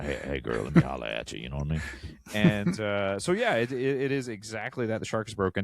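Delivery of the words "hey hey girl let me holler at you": very deep, raspy, rough and aggressive voice. Demonstrating the voice used to catfish someone, in a raspy, aggressive voice. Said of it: "my voice was so like raspy and aggressive".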